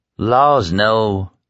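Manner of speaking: sleepy, half-asleep, drowsy delivery. Lying in the dark, Tom answers Stu's question, sleepily. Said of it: "Tom answered sleepily".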